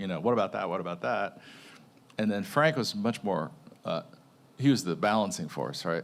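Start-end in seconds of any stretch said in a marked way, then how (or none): 0.2-1.4 quick-fire, fast, rapid repeated speech. Retelling how Michael fired off ideas in meetings: imitating Michael's rapid-fire talk. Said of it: "trying to keep up with rapid fire".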